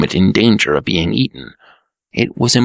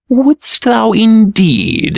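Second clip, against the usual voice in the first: eagerly inquiring tone, very high pitch; 10 semitones higher, 4 dB louder than usual. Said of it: "inquired the Green Prince eagerly".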